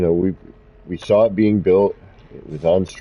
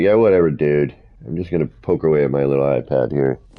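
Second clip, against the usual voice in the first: bored, uncaring, couldn't-care-less voice; 4 semitones lower than usual. Voicing an uncaring game crew member: indifferent crew member voice. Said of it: "even the guys in the crew don't even care".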